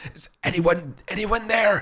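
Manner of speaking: very high, rasping wizard voice, pitched way up. Narrating a voice calling from behind a magically shut door, raspy Merlin voice. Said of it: "a raspy Merlin's voice".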